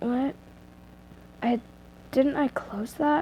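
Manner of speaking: whispered, groggy mumble under the breath. Reading a story aloud, the character waking in the dark: muttering. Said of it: "You muttered".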